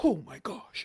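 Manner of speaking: acted, dazzled, awestruck gushing exclamation. Imitating people cheering behind a dancer: mock amazed onlookers. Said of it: "They're all like".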